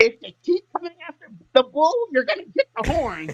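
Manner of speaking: put-on voice, pitched very high. Warning anyone who comes after the speaker's people: Stacy voice. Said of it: "let me say it in my Stacy voice".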